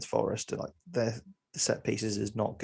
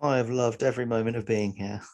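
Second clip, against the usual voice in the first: fake-sincere, dry tone with sarcasm laid on. Answering whether they have enjoyed being here: sarcastic. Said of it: "you have no sarcasm in that voice at all".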